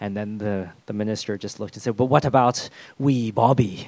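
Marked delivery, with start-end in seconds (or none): 2.0-3.9 put-on Scottish accent. Retelling the minister's reply to the church elders, in a Scottish accent. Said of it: "That's my Scottish accent".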